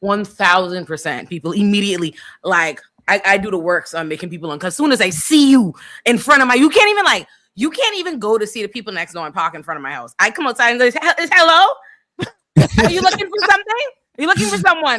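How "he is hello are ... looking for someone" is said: put-on, very high-pitched lady voice.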